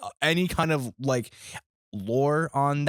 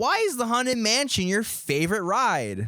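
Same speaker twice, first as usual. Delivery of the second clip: put-on voice, higher-pitched; 8 semitones higher than usual. Asking the other speaker a question again, in a higher put-on voice. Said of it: "to make your voice higher".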